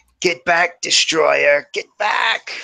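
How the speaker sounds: piercing, high, shrill, hissing creature voice. Quoting a spider-like creature's warning, in a high-pitched shrill voice. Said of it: "it's like in this high-pitched, shrill voice".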